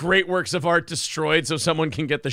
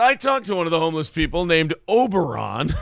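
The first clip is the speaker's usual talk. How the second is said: grave, dead-earnest, serious, solemn tone. Quoting what he said, retelling it in a serious voice. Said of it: "had to say it in a serious voice".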